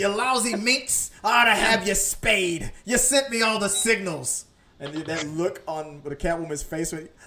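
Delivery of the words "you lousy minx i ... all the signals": loud, high-pitched character voice, belted out. Quoting the Danny DeVito Penguin insulting Catwoman: Danny DeVito Penguin impression. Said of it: "that was a great performance".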